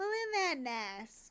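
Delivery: put-on elderly Southern lady voice. Explaining the face they were going for, the speaker demonstrates an old southern lady voice. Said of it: "like an old southern lady".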